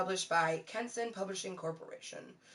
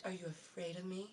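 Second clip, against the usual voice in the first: alluring, sensuous, seductive character tone; 12 dB quieter than usual. Giving each character a voice, here Dell: sensuous Dell voice. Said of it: "Dell is very sensuous, you know, so she has that".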